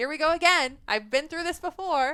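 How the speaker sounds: high, loud, weary here-we-go-again exasperation. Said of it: "I'm like".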